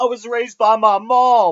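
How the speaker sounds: mock crying, high and loud.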